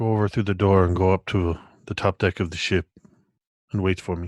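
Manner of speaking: calm, confidential, matter-of-fact delivery. Voicing a character who quietly orders a spirit away: speaking quietly. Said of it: "I say quietly to it".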